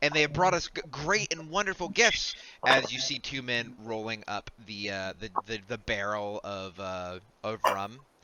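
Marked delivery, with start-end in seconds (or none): 0.0-2.4 pitched-up announcing character voice. Voicing Nemi announcing that the ship has set sail: Nemi voice. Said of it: "as she kinda gestures all of you".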